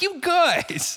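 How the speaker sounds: very high, loud, wacky, goofy stage voice. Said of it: "try to go that high".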